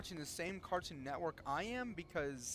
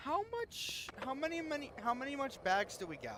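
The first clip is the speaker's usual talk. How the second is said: much higher, dumb-sounding voice. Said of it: "but stupid".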